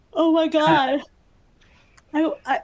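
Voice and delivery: talking through a yawn. A tired teacher reading out citations to the group: yawning while talking. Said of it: "I'm yawning so much".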